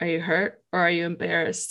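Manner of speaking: soft, hushed, private half-whisper. Retelling a coach's words after a ball hit the face: imitating a half-whisper. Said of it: "he whispers".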